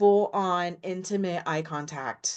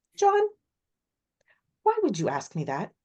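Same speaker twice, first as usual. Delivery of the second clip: animated voice swinging widely in pitch; 4 semitones higher than usual. Retelling how she answers the interviewer after two seconds of silence: imitating Nancy Grace. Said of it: "she just kinda cocks her head, like".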